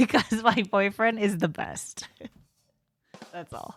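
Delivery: words broken up by giggling laughter. Apologizing for a sudden fit of laughter: laughing while talking. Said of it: "Sorry, I'm laughing".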